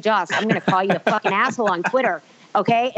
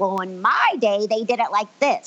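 mock ninety-year-old grandma voice. Comparing herself to an old grandma complaining about the show: imitating a ninety-year-old grandma. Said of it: "like that ninety-year-old grandma who's like".

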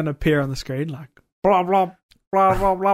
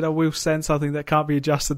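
ordinary talk

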